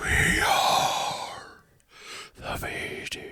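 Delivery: whispered, very drawn-out, slow, breathy, eerie voice. Opening a podcast with an intro line, putting on a creepy voice. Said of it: "that was my creepy V T".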